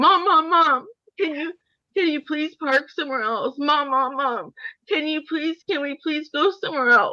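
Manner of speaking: high, tearful, acted-out crying child pleading. Retelling a scared son's plea while parking, imitating a crying child. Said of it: "my son's, like, shaking, crying".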